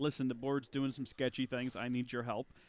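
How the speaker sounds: usual speaking voice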